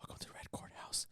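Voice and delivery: very soft, sultry, sexy whispered woman voice. Imitating the ai intro of their show: imitating a whispered sexy woman voice. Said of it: "I would just put sexy woman voice".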